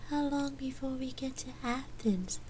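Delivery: drowsy, slow, drawn-out, very high-pitched voice. A companion asks the narrator a question in a sleepy voice. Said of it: "Gabrielle asked in a sleepy voice".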